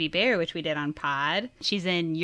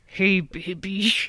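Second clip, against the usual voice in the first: put-on Deep South US accent. Trying a remembered voice for her podcast intro, Little Nicky deep-South voice. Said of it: "From the deep south".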